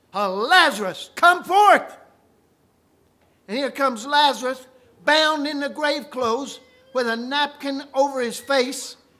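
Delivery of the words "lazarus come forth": loud, swooping, delighted, excited cry. Retelling how Jesus cried out to Lazarus: retelling an excited cry. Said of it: "when he cried with that excited voice".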